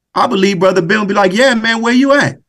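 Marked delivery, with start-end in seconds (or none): 1.4-2.4 put-on New Orleans local accent, pitched up. Imagining a friend answering a 3 a.m. call: New Orleans way of talking. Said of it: "Excuse my New Orleans".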